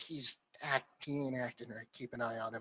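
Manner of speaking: very quiet, hushed, confidential-sounding aside. Voicing a character leaning in so another cannot hear: quiet aside. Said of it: "leans in so Drogoz can't hear him".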